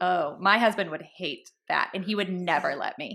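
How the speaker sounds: snarky, catty, backhanded put-on tone. Role-playing a snarky acquaintance commenting on hair: acting snarky. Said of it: "Jenna's gonna say something snarky about me".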